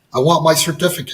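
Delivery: plain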